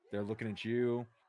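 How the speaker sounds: ordinary delivery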